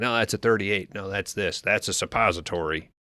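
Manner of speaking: normal talking voice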